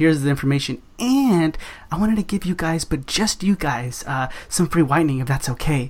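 conspiratorial, sneaky, just-for-you tone. Showing how to offer office staff free whitening: sneaky special-deal tone. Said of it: "But do you see how I said it?".

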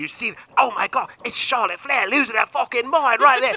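mock Australian wildlife-presenter voice. Mocking a brawl like a nature documentary: Steve Irwin Australian accent. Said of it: "you got me with the Australian accent".

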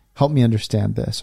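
ordinary talk

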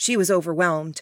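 ordinary delivery, nothing marked

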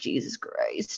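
muttered under breath. Speaker retells a slip-up in front of kids, muttered under the breath. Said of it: "like kind of under my breath".

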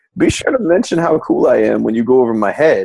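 put-on ice-cool, calm, unbothered delivery. Speaker recounts a scene where Kira and Sisko argue; imitating Sisko's cool calm delivery. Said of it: "Sisko plays it real cool and he's like".

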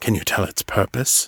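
low, hushed, quiet intimate voice. The captain asks a companion about a huge casting circle, voice pitched low. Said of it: "The captain pitched his voice low, so only Liam could hear".

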